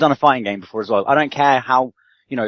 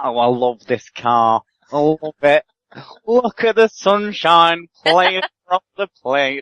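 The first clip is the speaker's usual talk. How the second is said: slow, ever so slightly camp voice; 4 semitones higher than usual. Comparing someone to Vic Reeves on TV: slightly camp Vic Reeves voice. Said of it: "in this kind of like ever so slightly camp voice".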